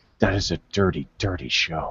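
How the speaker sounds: grave, hushed near-half-whisper, still rattled and shaken. Retelling how dad reacted when asked about Deadwood: imitating dad almost in a half-whisper. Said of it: "he said almost in a whisper".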